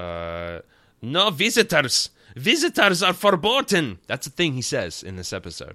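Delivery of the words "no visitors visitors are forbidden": put-on shrill, booming, drawn-out, slow German accent. Recapping an episode, quoting Dr. Adler in his German accent. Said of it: "he does have a German accent".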